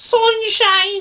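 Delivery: Manchester accent. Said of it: "That's all I can say".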